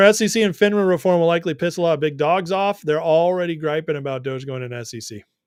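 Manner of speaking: usual speaking voice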